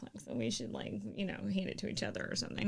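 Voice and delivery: soft, hushed, close whisper.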